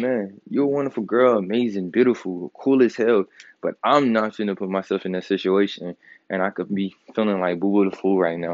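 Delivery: ordinary delivery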